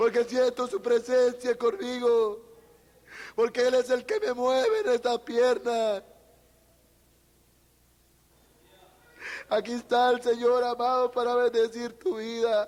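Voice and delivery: words spoken through tears, crying. Testifying about feeling god's presence in the leg, crying while speaking. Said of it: "Estoy llorando porque siento a mi Dios".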